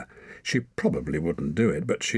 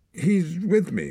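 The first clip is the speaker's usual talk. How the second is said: muttered, much higher pitch; 11 semitones higher than usual. Answering a suspicious girl's question, muttered. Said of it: "muttered Torak".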